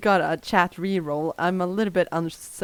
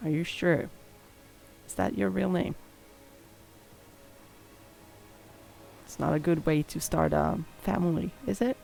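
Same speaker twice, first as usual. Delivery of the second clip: lowered, hushed, confiding voice; 5 dB quieter than usual. Narrator voicing a woman who holds back the feather pen, lowered voice. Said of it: "she just lowers her voice so it's kind of like just to you".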